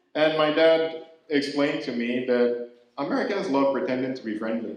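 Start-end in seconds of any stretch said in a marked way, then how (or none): none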